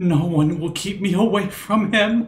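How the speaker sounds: high lady's voice. A narrator tells a player their own mouth speaks in another's voice, the lady's voice. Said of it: "not your own voice, but the lady's voice".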